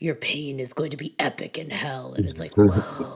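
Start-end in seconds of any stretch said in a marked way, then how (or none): 0.0-2.1 deep, low, throaty, menacing horror-movie voice. Describing an actor's movie voice versus his real one, the speaker does it low and throaty. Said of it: "low, throaty".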